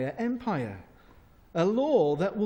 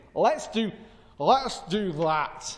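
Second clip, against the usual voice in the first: put-on Glaswegian accent, very slow and drawn out. Voicing the king agreeing to his advisers' plan: glaswegian accent. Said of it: "why you had Glaswegian accent then".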